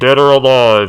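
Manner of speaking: very loud, booming movie cop voice. Quoting a line from the movie RoboCop, in a RoboCop impression. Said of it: "I'm trying to imitate him".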